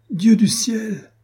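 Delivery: very high, loud, ringing exclamation. After her tender declaration to him, he cries out: exclaiming. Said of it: "s'écria".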